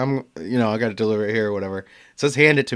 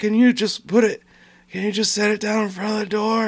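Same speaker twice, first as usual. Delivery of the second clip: put-on old lady voice, much higher pitch; 10 semitones higher than usual. Retelling a delivery, quoting the old lady behind the door, imitating an old lady's voice. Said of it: "an old lady's voice through the door".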